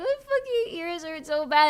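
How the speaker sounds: high, tearful, crying through pain. Retelling a FaceTime call while in ear pain: imitating own past crying.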